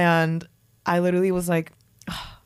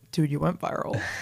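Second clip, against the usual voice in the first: put-on negative tone, lower, quieter; 3 semitones lower, 5 dB quieter than usual. Quoting her boyfriend after she woke up, retelling a negative tone. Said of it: "in the most like negative tone".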